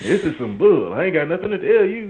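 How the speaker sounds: very high-pitched, loud, shrill comedian's voice. Imitating Bernie Mac answering questions about an affair: Bernie Mac impression. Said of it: "that was pretty good".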